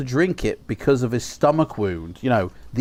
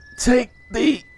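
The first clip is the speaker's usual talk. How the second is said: labored, strained whisper, higher; 11 semitones higher than usual. Voicing a dying old man warning of an ambush: labored whisper. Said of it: "he starts to speak in a labored whisper".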